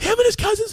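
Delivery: very high-pitched, acted, tearful crying voice. Speaker retells naming the boys who threatened him, imitating his own crying. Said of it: "I was crying".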